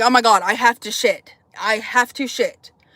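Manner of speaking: panicked, alarmed tone. Retelling being locked in a van, needing to go: imitating own panic. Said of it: "I'm fucking freaking out".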